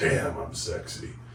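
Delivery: whispered, under-the-breath mutter. Retelling a joke you made to yourself while on a roll, muttered under the breath. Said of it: "I just went like under my breath".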